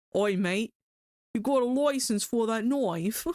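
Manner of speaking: put-on British accent. After remarking that a phrase sounds very british: mock british accent. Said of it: "That sounds very British".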